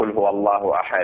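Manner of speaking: ordinary delivery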